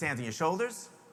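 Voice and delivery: ordinary talk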